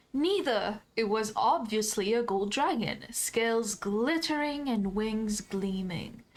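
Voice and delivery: dry, sarcastic, mocking tone. Answering a questioner's dragon question in character: sarcastic. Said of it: "kinda sarcastically say".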